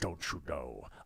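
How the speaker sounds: low, hushed mock impression voice. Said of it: "That's how Patrick Stewart talks".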